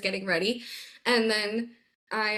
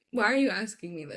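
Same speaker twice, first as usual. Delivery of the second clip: normal talking voice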